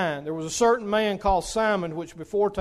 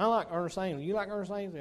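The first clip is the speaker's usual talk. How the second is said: put-on funny old fellow's voice; 8 dB quieter than usual. Imitating his hospital roommate: comical little old man voice. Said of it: "He talked like that".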